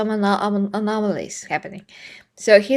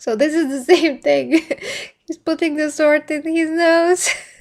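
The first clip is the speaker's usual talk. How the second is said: laughing to tears, crying with laughter, higher pitch; 6 semitones higher, 3 dB louder than usual. Describing a scene with a sword that the speaker finds extremely funny: laughing to tears. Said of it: "Okay, I'm really crying".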